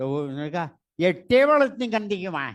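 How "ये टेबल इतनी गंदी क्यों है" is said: very strong put-on South Indian accent, loud, pitched up. Retelling a film-shoot story, speaker mimics an actress's line in a South Indian accent. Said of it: "ऐसे वेरी साउथ इंडियन स्टाइल".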